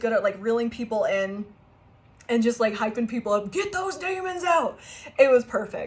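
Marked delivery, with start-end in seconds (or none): 3.5-4.8 high, hyped-up, crowd-rousing carny yell. Retelling a young carny at the carnival heckling people: imitating a carny yelling. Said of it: "He was heckling people".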